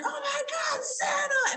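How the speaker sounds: mock very high, stretched, squealing, freaked-out scream. Recounting a moment in a store, the speaker re-enacts screaming it out: retelling a scream. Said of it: "I screamed it out".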